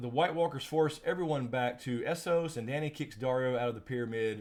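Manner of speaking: ordinary delivery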